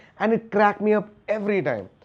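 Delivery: ordinary delivery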